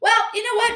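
high, sing-song, fake-polite, dismissive hostess voice.

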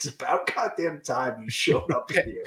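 overeager, awkward, thrilled, excited tone. Picturing a coach's reaction, imitating John Tortorella, awkwardly smiling and excited. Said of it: "awkwardly smiling, like, excited".

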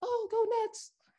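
very high-pitched, cheering diehard fan voice. Imitating the one diehard Nets fan you know: Obas impression. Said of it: "that's your Obas impression?".

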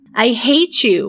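crying out, voice choking. Narrated scene: she stamps her foot at the woman; choked cry. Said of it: "she cried in a choked voice".

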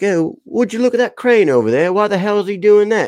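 very high-pitched put-on British accent. Parent retells what his little boy said last week, imitating the son's british accent. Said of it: "he did the British accent".

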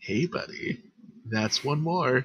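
quiet whispered voice. Voicing a creature heard by a player in a fight: whisper. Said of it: "you just hear a whisper".

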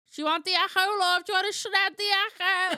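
shrill, booming, very high, loud street hawker's cry. A podcast host jokes with a co-host, like a town salesman selling the Echo. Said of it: "I sound like a man in town that's going to sell you the Echo".

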